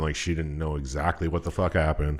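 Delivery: ordinary delivery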